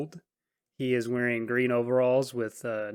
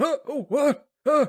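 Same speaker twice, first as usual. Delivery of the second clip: put-on very high, loud, drawn-out startled old voice; 6 dB louder than usual. Voicing an old driver who suddenly notices a passenger behind him: startled old driver. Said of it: "he's all wide-eyed".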